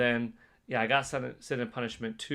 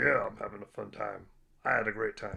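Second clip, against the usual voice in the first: low, deep put-on voice; 2 semitones lower than usual. Reading chat comments aloud, the speaker answers as the chair in a deep voice. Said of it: "Chair's got a deep voice".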